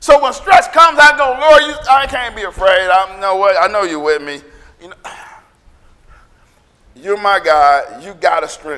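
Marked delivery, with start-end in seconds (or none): 1.4-8.8 insistent, commanding, demanding tone. Showing how to pray under stress: demanding prayer to God. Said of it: "I sound like I'm telling God what to do".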